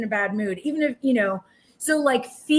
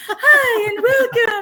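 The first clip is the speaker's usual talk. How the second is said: very high, raised, projected church-lady voice; 11 semitones higher, 6 dB louder than usual. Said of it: "That's the Relief Society voice".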